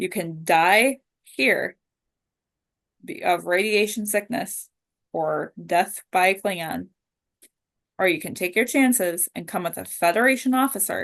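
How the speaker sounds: usual speaking voice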